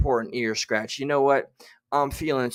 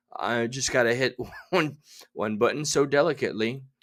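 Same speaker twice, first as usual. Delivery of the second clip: ordinary talk, nothing marked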